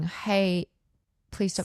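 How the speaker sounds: put-on gentle, soft pleading tone. Speaker retells how they gently ask someone to stop, imitating a gentle plea. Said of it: "a lot of like gently saying".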